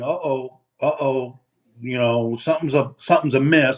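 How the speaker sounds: ordinary talk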